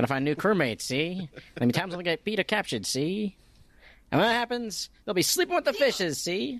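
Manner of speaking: put-on old-time thirties mobster voice, pitched very high. Rereading a character's lines as if he talks like a thirties mobster. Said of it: "talking like a thirties mobster".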